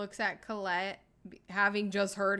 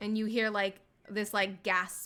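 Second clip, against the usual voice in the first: normal talking voice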